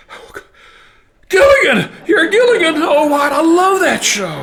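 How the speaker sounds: very high, loud, thrilled excited gush. Retelling a mother recognizing a caller on the phone: imitating excited mother. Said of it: "my excited mother says".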